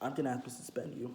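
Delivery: ordinary delivery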